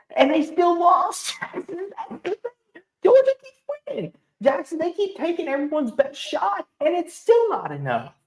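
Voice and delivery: high, laughing, giddy, happy delivery.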